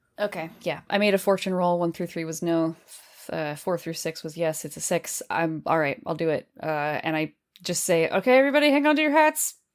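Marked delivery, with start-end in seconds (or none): 8.1-9.6 gabbled on purpose, too quick to follow, pitched up. Speaking in character, warning everybody to hang on: said too fast. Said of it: "trying to say it too fast".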